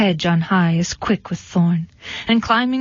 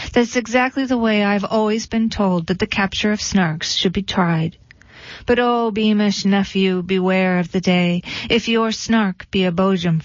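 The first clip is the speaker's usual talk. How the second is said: plain reading voice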